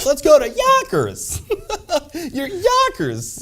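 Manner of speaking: mock, cheerful commercial-announcer delivery.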